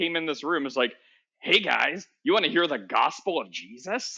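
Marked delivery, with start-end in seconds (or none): 1.4-4.2 put-on sneaky villain voice. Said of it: "You sound like Waluigi".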